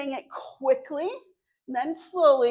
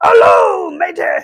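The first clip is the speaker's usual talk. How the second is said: very loud, piratey sea-dog voice; 10 dB louder than usual. Leading a hello rhyme, saying hello as piratey as possible: pirate voice. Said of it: "Let's say hello as piratey as we can".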